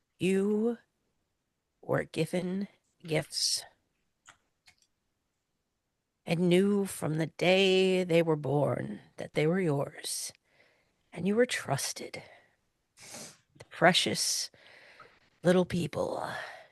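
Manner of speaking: low growl under the breath. Stepping up close to her as the others leave, in a low growl. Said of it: "I'm gonna say in a low growl".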